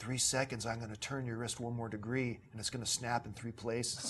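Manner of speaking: imitated whisper. Retelling a threat someone whispered into another's ear: imitating a whisper. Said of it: "Randy just whispers in my ear".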